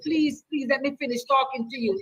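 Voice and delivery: acted-out begging, pleading tone. Retelling how a friend asked a woman in traffic to pull over: imitating someone begging. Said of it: "he begged her like this".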